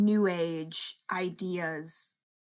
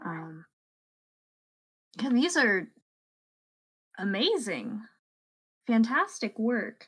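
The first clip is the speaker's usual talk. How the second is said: polite, mid-range delivery; 4 semitones higher, 3 dB louder than usual. Edith speaks to a painter busy at his work, trying to be polite. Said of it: "Edith is gonna try her best to be polite".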